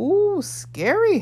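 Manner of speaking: amused, teasing tone, very high-pitched and loud. The fiery man responds to the narrator's father's roared threat, amused. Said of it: "the fiery man said with amusement".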